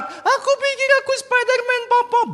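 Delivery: put-on very high little boy's voice.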